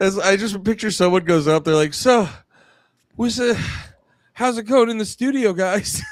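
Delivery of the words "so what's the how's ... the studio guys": vapid, canned, pitched-up clueless interviewer voice. Mocking a clueless interviewer asking a band a question: imitating a clueless interviewer. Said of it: "every dog shit interview I watch where they'll be like".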